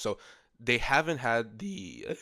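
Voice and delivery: cracking, breaking voice. Speaker explaining a hypothetical scenario to the others, voice cracking. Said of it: "sorry, voice crack".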